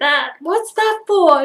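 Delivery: very loud, squeaky, high voice. Retelling what a woman asked the speaker, in a loud, squeaky voice. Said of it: "She says louder, sort of squeaky".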